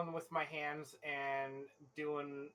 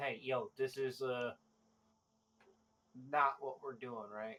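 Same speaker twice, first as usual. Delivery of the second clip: hushed stage whisper. Speaking quietly to everybody else in the group, half-whispering. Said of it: "I whispered to everybody like".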